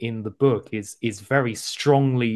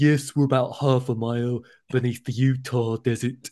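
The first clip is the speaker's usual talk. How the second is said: so-bad-it's-good choked-up voice, throat sounding clogged. Retelling how an audiobook narrator voices a character: terrible Christopher Eccleston impression. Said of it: "really terrible impression of Christopher Eccleston".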